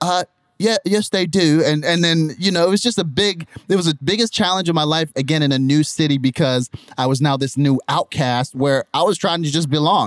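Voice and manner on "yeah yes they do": put-on British accent, pitched up. Retelling how he answered kids who teased him, in a British accent.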